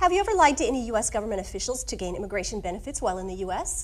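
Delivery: deliberately rapid-fire, rattled off very fast. Playing the officer in a practice exercise for the learner, say it very fast on purpose. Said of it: "So I say it really fast on purpose".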